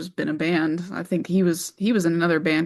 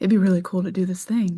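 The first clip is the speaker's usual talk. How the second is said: mock whispering. Retelling how everyone kept coming to suggest it: imitating someone whispering.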